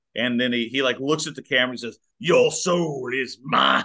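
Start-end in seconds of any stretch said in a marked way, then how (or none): 2.1-3.8 very slow, dramatic delivery with swooping, swinging pitch. Retelling a movie villain's line to the camera: dramatic Shang Tsung line. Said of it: "it's real dramatic".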